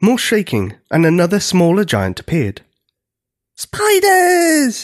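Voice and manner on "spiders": long, very high, drawn-out whooping cry. A smaller giant appears and spots the spiders, whooping. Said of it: "it whooped".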